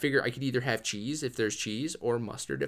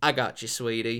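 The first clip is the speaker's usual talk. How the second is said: put-on old lady voice. Retelling a fast-food cashier's reply to a ketchup request, imitating an old lady cashier. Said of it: "Claus looking old lady working at the".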